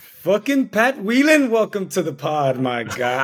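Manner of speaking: sing-song Scottish accent. Welcoming a guest to the pod, Scottish accent. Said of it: "how would you rate my Scottish accent?".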